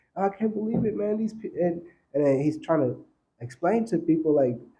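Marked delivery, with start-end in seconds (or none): 0.2-1.5 put-on high sobbing with upset disbelief. Retelling a man's words after learning hard truths, imitating someone crying. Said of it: "he was crying his eyes out".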